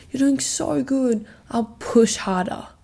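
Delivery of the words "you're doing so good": cheering, supportive yell. Showing the kind of yelling that helps: imitating a supportive yell. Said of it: "if you yell at me and say".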